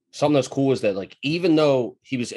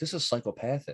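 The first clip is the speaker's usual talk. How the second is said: very soft, hushed, barely voiced mutter under the breath; 10 dB quieter than usual. Retelling the speaker's mom reacting to a bizarre character, muttered under breath. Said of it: "She was like under her breath".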